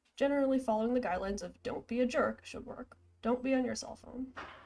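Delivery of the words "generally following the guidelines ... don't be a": plain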